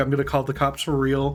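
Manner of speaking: usual speaking voice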